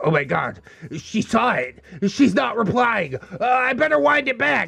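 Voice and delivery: nervous, paranoid, panicky fretting with rising pitch. Retelling a texter's thoughts after his joke got no reply: imitating someone paranoid. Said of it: "because he got paranoid. He's like".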